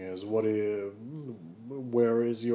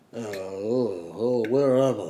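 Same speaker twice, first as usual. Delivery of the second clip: silly put-on dog voice with long drawn-out "oh"; 4 dB louder than usual. Narrating a made-up scene, voicing a dog tied to a chair, in a dog character voice. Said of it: "This fucking dog's voice keeps changing".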